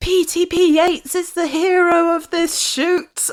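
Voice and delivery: put-on, very high, long drawn-out shriek. Retelling running around the town chasing ghosts: retelling a scream. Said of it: "I was also screaming".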